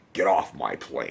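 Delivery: very low, deep, creaky mumble. Showing the kind of voice the actor is famous for, do a low, mumbly Harrison Ford voice. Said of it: "That kind of voice".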